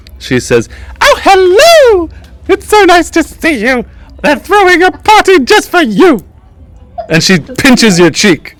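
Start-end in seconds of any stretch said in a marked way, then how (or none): 1.0-6.2 very high-pitched, fairy-like character voice. Voicing the High Seat greeting a player: Toaster Fairy voice from Scrooged. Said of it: "not unlike the Toaster Fairy from".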